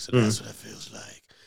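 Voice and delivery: rough, loud, ground-out delivery. Describing Batman talking to himself after Catwoman disappears, Batman voice. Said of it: "he's still talking in the Batman voice".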